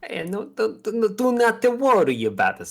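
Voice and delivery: booming, very high, shrill, sing-song put-on Italian accent. Playing a character in a game, a player speaks in an Italian accent. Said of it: "was a pretty Italian accent you just".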